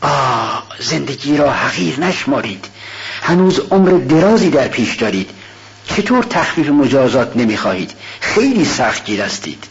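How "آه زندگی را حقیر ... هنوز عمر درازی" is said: ordinary delivery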